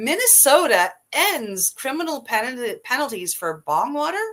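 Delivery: disbelieving lift, rising tone. Reading a news headline aloud: said as a question. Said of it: "you said that with a question mark at the end".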